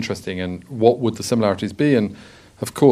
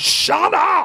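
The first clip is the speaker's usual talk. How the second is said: mock sudden shrill scream, very high. Retelling an actor screaming at a clapping audience: imitating Michael Sheen screaming. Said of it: "he just screamed out".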